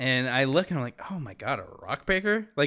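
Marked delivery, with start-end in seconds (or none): none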